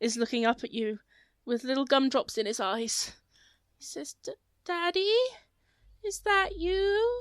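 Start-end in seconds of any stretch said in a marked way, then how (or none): 4.2-7.2 put-on tiny child voice, high-pitched, very slow. Voicing a little gingerbread child looking up at a player: little gingerbread child voice. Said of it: "one little gingerbread child ... He says".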